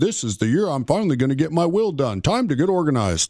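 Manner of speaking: ordinary talk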